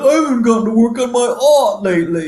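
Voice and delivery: high, loud, whiny whimper.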